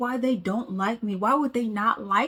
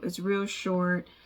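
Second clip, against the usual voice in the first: ordinary delivery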